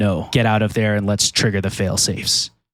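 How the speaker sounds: hoarse, raspy, bitter, deep female voice. Game master voicing a message to the players, in a raspy, deep, bitter female voice. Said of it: "familiar female voice, raspy, deep, full of bitter".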